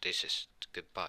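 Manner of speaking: plain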